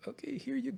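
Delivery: very high, soft, timid, nervous voice. Retelling handing a little boy a cookie: imitating own nervous voice. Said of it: "I was so nervous".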